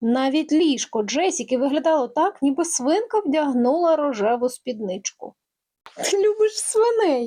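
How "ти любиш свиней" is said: sudden, high, bright exclaimed outburst. Judy, seeing pigs all over Jessica's room, exclaims to Jessica. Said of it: "вигукнула Джуді".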